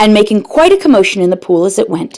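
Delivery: plain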